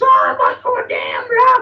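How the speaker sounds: loud, high-pitched puppet voice. Retell what he says when Storm grabs him, in a Muppet voice. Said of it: "is doing a Muppet voice".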